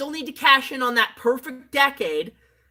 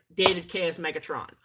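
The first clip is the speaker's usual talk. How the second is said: usual speaking voice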